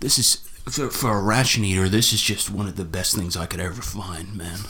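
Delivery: low, joyful, happy surfer-dude voice. Describing a channel host's reaction to really old ones, imitating a surfer-dude voice. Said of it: "he speaks like a surfer dude".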